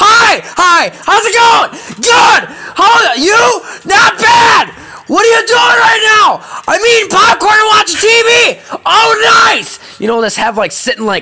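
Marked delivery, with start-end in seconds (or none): 0.0-9.8 very high, very slow, drawn-out shouting. Retelling a typical conversation with a best friend: imitating screaming at each other. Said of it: "It's like screaming at each other".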